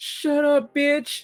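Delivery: put-on very high, tearful, weepy little-girl voice. Retelling what a little girl in the theater said, imitating her weepy crying voice. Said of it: "like she's obviously crying voice".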